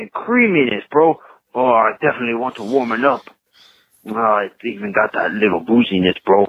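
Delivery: put-on Mexican accent. Tasting a chocolate coffee beer, a Florida guy talks Mexican: put-on Mexican accent.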